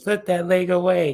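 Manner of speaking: stern, loud, very high-pitched scolding tone. Showing off a pose, the speaker quotes their sister in [name]'s big sis voice. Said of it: "in my big sis voice".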